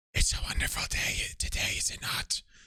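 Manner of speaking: timid, breathy voice. Reading a story aloud, voicing a stranger greeting the narrator: meek, breathy voice. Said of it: "in this meek, breathy voice".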